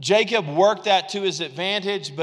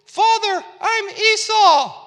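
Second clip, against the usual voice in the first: very high, small voice; 3 dB louder than usual. Retelling the Bible story, Jacob speaking to his father Isaac: Jacob's very high little voice. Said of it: "Jacob has a very high little voice".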